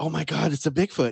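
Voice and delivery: put-on shocked gasp. Retelling a lady seeing a Bigfoot from her car: imitating a shocked gasp. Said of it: "this lady does this gasp".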